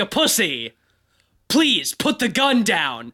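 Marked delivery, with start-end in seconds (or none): 1.5-3.0 mock-bossy, commanding line reading, slower. Reenacting someone being made to repeat a line again and again, mock-bossy. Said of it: "now you sound like you're bossing me around".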